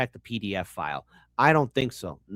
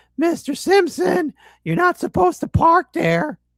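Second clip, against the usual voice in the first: squeaky, very high voice; 6 dB louder than usual. Speaker telling the audience a kid sounds like a cartoon teen, Squeaky Voiced Teen voice. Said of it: "sounds like the squeaky voiced teen from The Simpsons".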